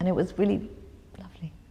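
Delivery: softly whispered, audibly moved and emotional.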